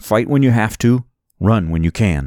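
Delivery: ordinary delivery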